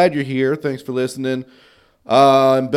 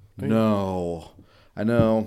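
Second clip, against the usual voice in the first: low, soft, let-down, deflated disappointment; 5 semitones lower, 7 dB quieter than usual. Asked whether they went to any Final Four events, answering disappointed. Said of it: "You sound disappointed".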